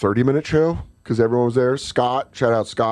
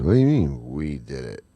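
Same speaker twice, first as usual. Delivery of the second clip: mock, very drunk man voice, lower; 10 semitones lower, 3 dB quieter than usual. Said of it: "This guy's so drunk he's a zombie".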